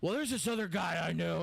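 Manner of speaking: rough, creaky, crackling put-on voice. Retelling what a manager suggested for a track: Hulk Hogan voice. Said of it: "It's my Hogan voice".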